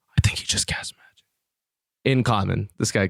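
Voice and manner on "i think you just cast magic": hushed, breathy whisper under the breath. Game narrator voices one of the two people the player confronted, whispering.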